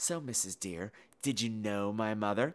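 play-acted cheeky, sassy, pointed tone. Retelling a movie scene, voicing the girl's question: sassy voice. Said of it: "she gets that sassy face on".

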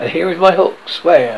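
ordinary delivery

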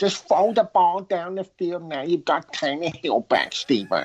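put-on high, whiny, nagging New York accent. Imagining what the wife said to her husband that night, imitating the wife's voice. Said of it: "you sound like Stephen Ross's deaf wife".

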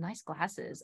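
put-on suggestive tone. Speaker retells a man at a grocery store complimenting their glasses, mock sexual tone. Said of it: "And it was like in like a sexual tone".

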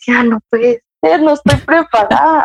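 weeping, tearful voice with audible disbelief. Retelling what she said after the test: imitating herself crying. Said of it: "y yo llorando y llorando y llorando y decía".

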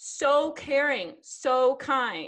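very slow, high, drawn-out, syrupy mock sweetness. Reacting to a crude quoted message just read aloud: sarcastic. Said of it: "just really feeling the sarcasm today".

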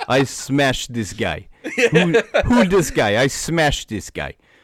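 loud, swooping, put-on Russian accent. Asked to keep doing the accent, imitating the fighter: russian accent. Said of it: "The Russian accent".

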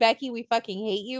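normal talking voice

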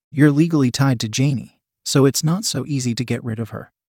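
ordinary delivery

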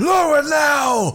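very high, urgent yelled shout, drawn out. Narrator voices a man at the keep ordering the portcullis lowered, urgent shout. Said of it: "he just shouts".

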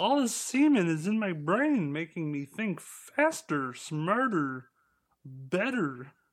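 high, bad frog puppet voice. Joking about a lookalike, doing a bad Jordan Peterson impression. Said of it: "why does your Jordan Peterson sound like a bad impression of Kermit the Frog".

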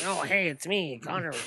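small, tiny, odd little voice. Describing a wrestler's voice to friends: Connor O'Brien's weird little voice. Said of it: "this really weird little, like, voice".

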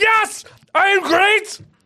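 aggressive, very loud, slow shout, every word hit hard. Imitating an imagined interview guest answering a friendly question: imitating Hitler answering aggressively. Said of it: "he would always be super aggressive in his answers".

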